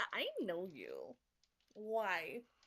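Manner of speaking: put-on valley girl speech. Voicing the character Ginkgo, recognizing Aza, in a Valley Girl voice. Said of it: "we're going Valley Girl".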